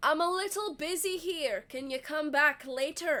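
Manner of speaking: slightly Scottish put-on accent. Voicing the captain telling a visitor he is busy: accent drifting into scottish. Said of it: "I don't know what accent this is. It's g-, going slightly too far into Scottish".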